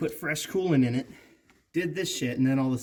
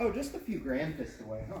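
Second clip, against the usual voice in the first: soft, casual, couldn't-care-less offhand tone; 2 semitones higher, 8 dB quieter than usual. Teasing the other speaker about an expensive purchase; mock-nonchalant. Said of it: "you sound so nonchalant about it".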